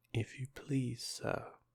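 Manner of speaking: timid, meek, shy, slow. Alice, desperate for help, addresses the rabbit as he comes near: low, timid voice. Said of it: "she began in a low, timid voice".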